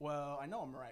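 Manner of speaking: ordinary talk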